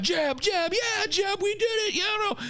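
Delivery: put-on, very high, excited celebrating-crowd cheering. Acting out the campaign camp cheering the election win: imitating cheering campaign staff. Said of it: "everybody in his camp is like".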